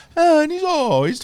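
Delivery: very high, exaggerated put-on Italian accent.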